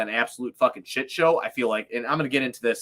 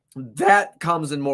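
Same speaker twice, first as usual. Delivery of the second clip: voice breaking and cracking mid-phrase; 3 semitones higher, 4 dB louder than usual. Talking with another person, the speaker's voice starts cracking mid-sentence. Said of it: "that was a voice crack".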